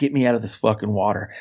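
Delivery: ordinary delivery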